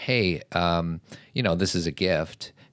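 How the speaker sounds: ordinary delivery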